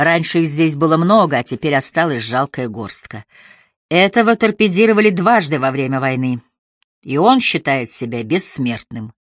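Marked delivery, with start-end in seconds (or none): none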